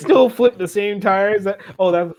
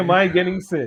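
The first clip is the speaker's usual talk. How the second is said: ordinary talk, nothing marked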